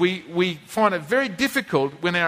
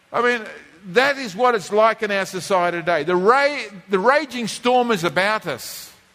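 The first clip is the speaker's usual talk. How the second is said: normal talking voice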